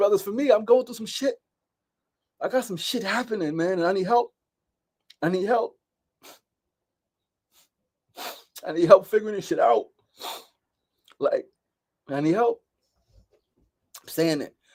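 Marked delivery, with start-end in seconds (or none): 0.0-12.6 tearful, pitched-up voice on the verge of tears. Telling a group of brothers about needing help, on the verge of tears. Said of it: "I'm about to cry now".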